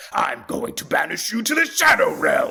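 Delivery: deep, pressed, creaky voice, sounding pained. Showing the new voice for the evil side: deeper, harder-pressed Yami Marik voice. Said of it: "press harder on the chords and deepen it".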